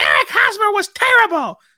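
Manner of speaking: shrill, very loud screech with big swoops. Telling how someone from the Northeast cut in about a player, imitating a screeching Northeast voice. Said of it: "this screeching voice from the Northeast reeks up and goes".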